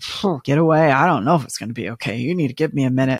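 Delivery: fast, put-on, dismissive brush-off. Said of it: "And you're like".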